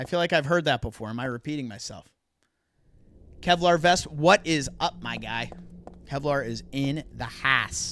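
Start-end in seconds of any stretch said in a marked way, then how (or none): 6.0-7.9 Pittsburgh accent, house said like hass. Showing how people say a phrase here: Pittsburghese accent. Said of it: "as we say here".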